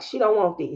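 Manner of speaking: normal talking voice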